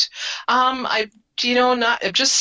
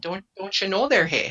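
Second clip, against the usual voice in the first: put-on upper Midwest accent; 3 dB quieter than usual. Joking with a friend about local speech: put-on upper Midwest accent. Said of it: "you do it very well".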